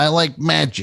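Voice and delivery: put-on upstate New York accent. Describing a guy on the show, imitating an upstate New York accent. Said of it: "this guy clearly from upstate New York just being like".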